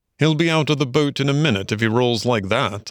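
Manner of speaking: plain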